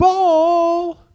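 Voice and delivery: loud, high-pitched shout.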